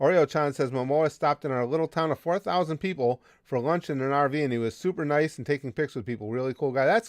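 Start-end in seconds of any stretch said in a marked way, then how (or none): none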